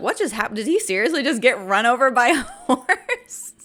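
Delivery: talking through laughter. Retelling a reaction to a movie scene, laughing while talking. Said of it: "Sorry that I'm laughing".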